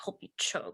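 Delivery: whispered, muttered under the breath. Retelling handing a cooked meal to others: muttering under one's breath. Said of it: "under my breath".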